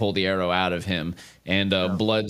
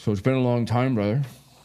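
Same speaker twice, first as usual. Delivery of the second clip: put-on character voice, muffled, mouth full; 3 semitones higher than usual. Narrator voicing Orin greeting his brother: Orin talking with mouth full. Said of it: "he speaks to you with his mouth full".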